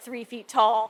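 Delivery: ordinary talk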